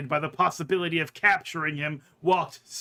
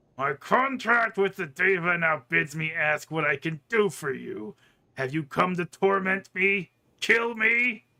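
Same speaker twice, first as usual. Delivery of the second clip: words pushed out through tightly clenched teeth. Narrating a story, a ranting figure turns back to the listener: through gritted teeth. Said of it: "speaks through gritted teeth".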